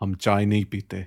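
mock grave, solemn, deep, somber delivery. Retelling a family story, quoting his dad in a mock-somber voice. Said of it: "my dad said in his most somber voice".

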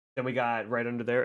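ordinary talk, nothing marked

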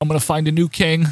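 put-on, upset, emotional voice. Retelling what an upset Bobby Heenan said: imitating an emotional Bobby Heenan. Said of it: "he's all emotional. He's like".

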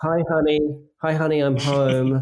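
mock weary, fed-up, dragging, so over it. Voicing a figure on a poster, imitating someone fed up. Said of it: "so, so over it".

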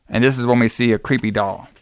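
ordinary talk

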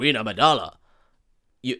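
put-on alien villain voice. Retelling a film scene, starting the Viceroy's line: attempted Viceroy voice. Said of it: "I can't do the voice".

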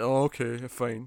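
acted-out snide, sarcastic, grudging tone. Mimicking how the other speaker will answer, imitating a snide reply. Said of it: "You're gonna give me a little snide".

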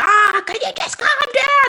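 fed-up, angry, very high outburst. Retelling telling irrational kids to calm down: imitating angry words. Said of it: "you get angry at them and you go".

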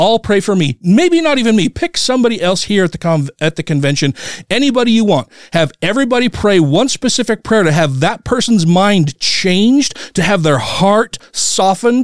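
heated, amped-up yelling. Recounting what they yelled at people at the convention; retelling a yell. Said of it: "I'm fucking yelling it".

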